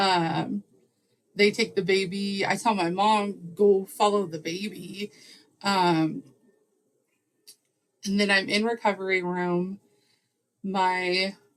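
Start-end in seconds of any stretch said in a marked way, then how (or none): none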